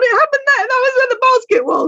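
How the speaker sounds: very high-pitched voice. Retelling how a companion pointed out the exact spot, imitating Al. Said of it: "I just love your impression of me".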